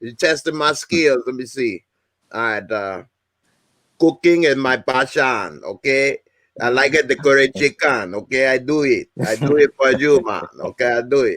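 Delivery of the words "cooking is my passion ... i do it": Trinidadian accent throughout. Trying out a Trinidadian accent after being asked: Trinidadian accent. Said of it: "I might be able to do a T N T accent".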